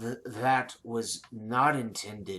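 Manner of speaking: soft, growling dragon voice. Narrating a scene where the dragon answers the dwarf: growling dragon voice. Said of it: "she growls out this response".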